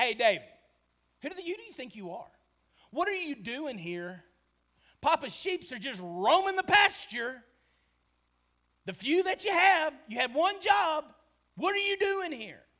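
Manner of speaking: mock condescending contempt. Retelling David's big brother scolding him, with mocking big-brother contempt. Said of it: "hear just the laughable contempt in his voice".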